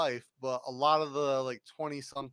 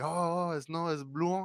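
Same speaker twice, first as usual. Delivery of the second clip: slow, unhurried put-on French accent; 4 semitones higher than usual. Imitating how French-speaking friends pronounce the speaker's name, in a French accent. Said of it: "they'll say my name with like a traditional like French accent".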